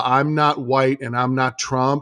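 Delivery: ordinary talk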